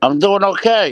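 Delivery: loud, chewing through the words, mouth full. Answering a greeting while eating, eating while talking. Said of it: "I got chicken cutlet hanging out of my mouth".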